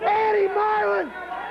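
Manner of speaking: loud, outraged, indignant shouting rant.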